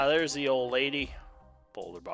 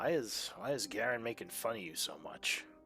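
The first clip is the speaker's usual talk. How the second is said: quiet, soft, hushed half-whisper; 7 dB quieter than usual. Voicing a character who asks another character a question: half-whispering. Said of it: "He whispers".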